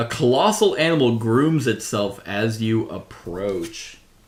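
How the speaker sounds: usual speaking voice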